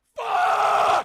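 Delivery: very loud, very high-pitched scream. Reacting in a played clip, yelling really loud. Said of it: "Whenever Joe yells really loud".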